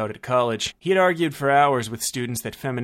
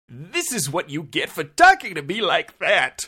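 victorious, crowing, high and swooping; 5 semitones higher than usual. Brunt, after activating scramble mode on the phone, speaking triumphantly. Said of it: "Brunt said triumphantly".

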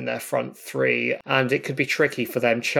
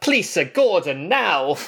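put-on loud, high, raised Italian accent; 6 semitones higher, 5 dB louder than usual. Imagining a football manager asking for a player: Antonio Conte in an Italian accent. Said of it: "in his beautiful Italian accent going".

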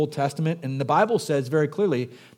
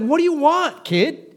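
put-on very high, cranky, grumpy old man voice, raised; 13 semitones higher, 5 dB louder than usual. Retelling a Bible scene, voicing the woken sleeper answering a kid: mock-grumpy old man. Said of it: "He's a grumpy old man".

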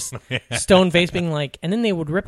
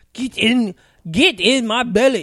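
bad put-on Scottish accent, much slower; 6 semitones higher, 4 dB louder than usual. Trading movie-character quotes, doing a bad Fat Bastard impression. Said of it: "We're not good at it".

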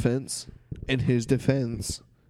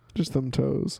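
normal talking voice

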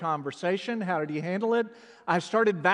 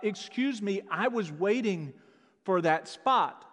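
usual speaking voice

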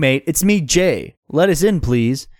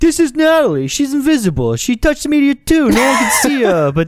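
very high-pitched New York accent; 11 semitones higher, 3 dB louder than usual. Introducing a character named natalie during a comedy scene, in a new york accent. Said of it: "Why is this like a New Yorker accent?".

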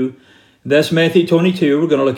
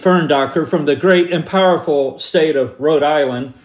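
normal talking voice

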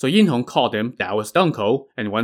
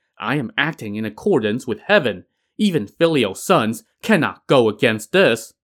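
plain

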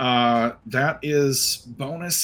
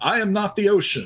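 really cheesy, high, heroic yelling voice. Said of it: "yells out in a really, really cheesy voice".

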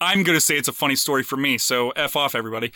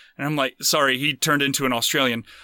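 ordinary talk

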